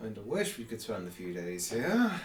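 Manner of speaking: low, mumbled mutter to himself under the breath. Voicing a character who sips a drink: muttered under his breath. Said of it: "very under his breath".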